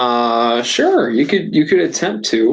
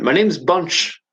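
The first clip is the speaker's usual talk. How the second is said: put-on character voice with English accent; 4 semitones higher than usual. Voicing the gargoyle bunch introducing himself: english accent. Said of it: "he'd have an English accent".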